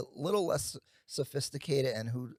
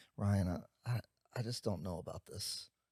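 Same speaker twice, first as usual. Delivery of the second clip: put-on low, quiet, downbeat, hesitant sad tone; 5 semitones lower, 7 dB quieter than usual. Describing a late-night call after going under contract, imitating the caller's sad voice. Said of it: "they they give you the sad voice".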